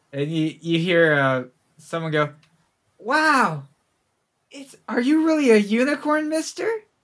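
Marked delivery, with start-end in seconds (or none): 3.0-6.7 put-on small kid voice, much higher. Voicing a small kid who calls out to a player's character; small kid voice. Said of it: "It was a small kid".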